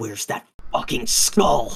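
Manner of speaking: voice utterly seething with hatred. Voicing a character who demands a lost skull: voice full of hatred. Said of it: "absolutely the most hatred in his voice".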